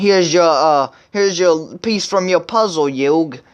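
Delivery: chatty, put-on Brooklyn accent. Acting out a character showing up at Yugi's door: Joey's Brooklyn accent. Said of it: "your Brooklyn accent. You gotta have a Brooklyn accent whenever you do Joey".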